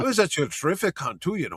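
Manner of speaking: put-on thick Irish accent. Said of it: "he's got a thick Irish accent".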